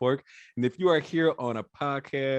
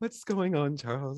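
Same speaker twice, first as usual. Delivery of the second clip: mock-formal, professional-sounding voice; 4 dB quieter than usual. Host echoes the guest's greeting back, imitating Ashley's professional voice. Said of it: "don't act different now".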